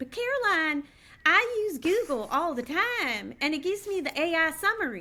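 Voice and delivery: put-on Southern accent. Retelling a talk with mom about AI, speaker quotes her: sweet Southern accent. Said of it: "she goes in her sweet Southern accent".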